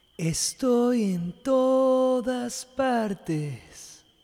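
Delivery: very slow, gentle, sweet, loving, high-pitched voice. A hidden voice answers Core's question, answering sweetly. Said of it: "la voz dulcemente contestó".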